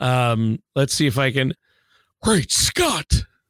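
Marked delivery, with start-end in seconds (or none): 2.2-3.1 tossed-off delivery, pitched up. Trying out an old impression for the co-host: Christopher Lloyd impression. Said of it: "do a great Christopher Lloyd impression".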